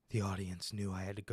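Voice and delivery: play-acted hushed, mournful voiceover, low, very quiet. Imitating how a man talks on a voiceover: mock-sad low tone. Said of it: "talking in like a low tone".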